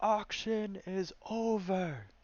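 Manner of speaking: very high shout, drawn out. Describing an auction, acting out him shouting to everyone: retelling a shouted announcement. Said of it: "he'll shout to everyone".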